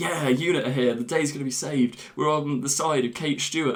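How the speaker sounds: ordinary talk, nothing marked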